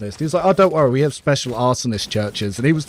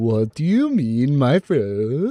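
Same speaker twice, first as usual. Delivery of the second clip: mock, exaggerated, overdone Norwegian accent. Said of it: "I'll overcorrect my bit".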